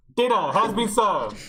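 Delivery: very high, very loud loudspeaker announcer voice. Among friends, calling everyone to dinner in a Big Brother announcer voice. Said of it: "This sounds like Big Brother".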